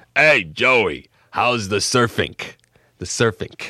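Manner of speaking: put-on big, heavy, rough, gruff Brooklyn street accent. Speaker imitates a man calling out from his front porch, big gruff brooklyn voice. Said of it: "this big, gruff voice talk like this".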